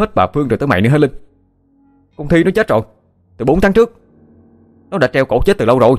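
high, impatient yelling, all patience gone. Reading a story, Vinh yells at a frightened Linh; shouting, out of patience. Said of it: "Vinh gào lên, dường như đã mất hết kiên nhẫn".

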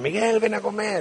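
high, mild, mock calling voice, projected far.

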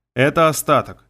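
ordinary delivery, nothing marked

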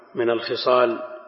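normal talking voice

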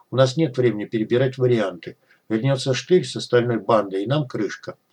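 ordinary delivery

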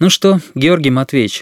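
plain reading voice

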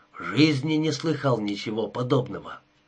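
ordinary delivery

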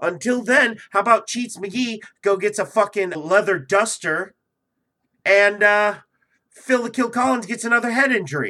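manic, wound-up energy. Keeping the energy up until the show ends, speaker rants: manic energy. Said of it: "this fucking manic, depressive energy that I got going right now".

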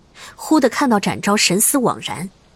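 ordinary delivery

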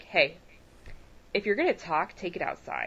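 curt, rude, whispered scolding tone. Retelling what a man at the movie said to someone talking behind them: imitating a rude tone. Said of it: "in quite a rude tone of voice".

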